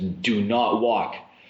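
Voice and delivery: mock insistent, firm, adamant tone. Retelling the bus driver's warning not to walk: imitating an adamant warning. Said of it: "he was very adamant".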